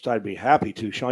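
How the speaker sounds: very low, minimalist announcer delivery. Retelling how Summerall answered when asked to throw to the promo: Summerall's minimalist voice. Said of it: "Mister Minimalist with that voice".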